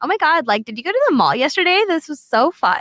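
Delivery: high, swooping put-on valley girl voice. Talking about overusing the word like, a speaker gives their best valley girl impression. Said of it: "best Valley Girl impression".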